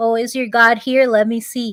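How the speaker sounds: ordinary talk, nothing marked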